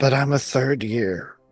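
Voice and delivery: mumbled, muttered quietly under the breath. A defeated student, told to keep up the good work, mumbled under his breath. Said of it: "he mumbles under his breath".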